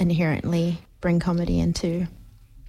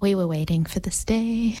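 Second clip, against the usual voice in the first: ordinary delivery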